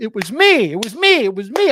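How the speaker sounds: loud, high-pitched scream. Retelling reacting to a stream at the computer screen: imitating own screaming. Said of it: "I'm screaming at the computer screen".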